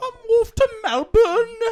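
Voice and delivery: very high, very loud, put-on British accent. Comparing accents, the speaker shows how Brits would say it, in a put-on British accent. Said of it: "Brits Brits would say".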